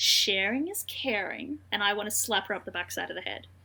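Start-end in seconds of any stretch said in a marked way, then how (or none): 0.0-1.6 very smug, self-satisfied, petty tone. Retelling a petty sister's line to the ring owners: imitating a smug remark. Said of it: "very smugly says".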